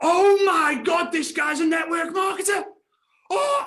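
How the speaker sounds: very high, shrill, loud, drawn-out top-of-the-lungs yell. Retelling what a man said at the top of his voice, retelling a shout. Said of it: "at the top of his voice".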